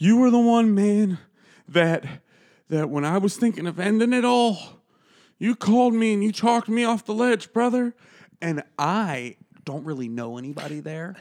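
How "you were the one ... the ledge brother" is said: high, loud, tipsy, emotional voice. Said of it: "at one point he says".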